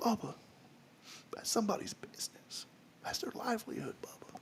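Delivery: whispered, hushed voice with put-on, laid-on heartfelt feeling. Imitating a friend's sincere, compassionate words, trying to sound emotional. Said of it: "I'm gonna try to get emotional".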